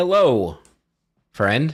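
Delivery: shouting across. A player character calls out to ogres about fifty or sixty feet away, yelling out. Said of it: "I'll yell out in common".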